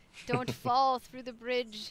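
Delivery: put-on acted wise old voice. Suggesting a game character warns new players on a bridge: Papa Vanu impression. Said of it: "That's my Papa Vanu impression".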